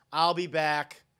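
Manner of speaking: flat, lifeless, level monotone. Imitating how a trailer line was delivered: flat Linda Hamilton delivery. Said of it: "So flat, like".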